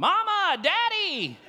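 very loud, very high holler. Retelling calling out to parents for rescue: imitating own past shouting. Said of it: "I start shouting".

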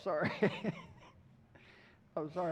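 breathy, giggling through the words, laughing. Apologizing to the audience after getting tickled: laughing while talking. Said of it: "I got tickled there".

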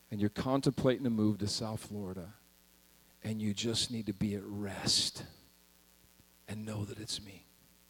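put-on calm speech. Quoting what he said very calmly after she cried; retelling a very calm remark. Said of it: "he said very calmly after that".

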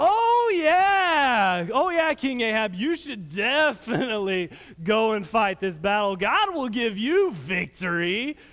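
slow, heavy, dripping sarcasm, acted out. Retelling a prophet's answer to a king: imitating a sarcastic reply. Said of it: "he said it very sarcastically".

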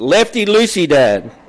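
loud, high-pitched yell at the top of the lungs. Retelling a son yelling directions during a turn: imitating a son yelling at the top of his voice. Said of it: "he's yelling at the top of his voice".

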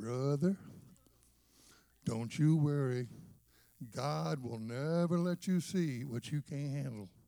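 put-on southern drawl. Retelling a man's reassuring words: imitating Don Braswell's southern drawl. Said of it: "in his southern drawl and said".

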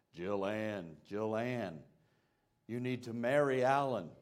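low, deep, hidden-sounding calling voice. Retelling a proposal story, a voice from behind a wall, imitating Alan's deep voice. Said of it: "saying in a deep voice".

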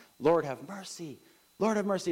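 put-on high repeated yell. Retelling the story of lepers calling to Jesus: imitating the lepers yelling. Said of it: "They're yelling at him".

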